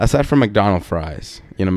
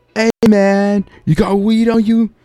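shrill, very high, loud shout; 11 semitones higher, 4 dB louder than usual. Recounting a man nicknamed Mr. Jersey shouting at someone, imitating Mr. Jersey's loud shout. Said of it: "literally just shouts at him, kind of like loud".

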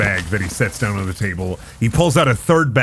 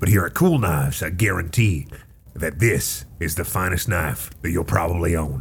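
gruff put-on dwarf character voice; 5 semitones lower, 3 dB quieter than usual. Game master voicing a dwarf selling knives to the players, gruff dwarf voice. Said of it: "and a gruff dwarf with a very long gray beard and blonde eyebrows".

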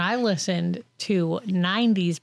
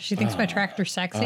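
ordinary delivery

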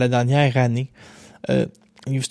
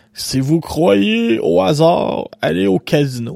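put-on big, thick, heavy smoker's voice; 4 semitones higher, 4 dB louder than usual. Quoting a saying a friend kept repeating: imitating André Arthur's heavy smoker's voice. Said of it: "avec sa grosse voix de fumeur".

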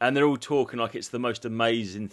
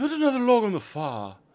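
very high posh voice, "fire" said as one syllable; 10 semitones higher than usual. Showing how posh people say fire: imitating a posh pronunciation of fire. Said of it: "they do say it a bit like that".

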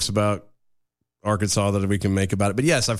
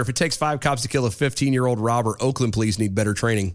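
plain

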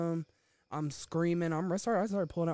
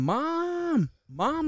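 high, wailing, stretched-out scream; 12 semitones higher, 8 dB louder than usual. Retelling the moment he started screaming for his mom, imitating his scream. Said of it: "He started screaming".

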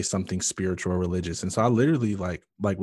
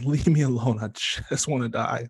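mild, held-back, toned-down mock scream; 3 semitones higher than usual. Speaker recalls screaming at a woman praying for them; retelling their screaming. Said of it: "the whole time I just kept screaming".

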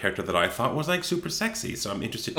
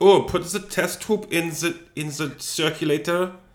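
mad scientist voice, German accent, much higher; 8 semitones higher than usual. Asked to do a German accent, speaker demonstrates: German mad scientist voice. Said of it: "I just become like a mad scientist".

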